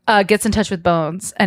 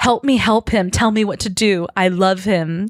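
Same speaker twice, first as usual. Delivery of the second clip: normal talking voice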